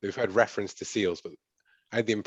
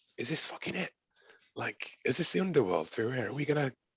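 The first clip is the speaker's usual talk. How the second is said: hushed, higher whispered voice; 5 semitones higher than usual. Voicing a character working the locks after a roll: whispering. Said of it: "whispering as I'm, like, working the, the locks".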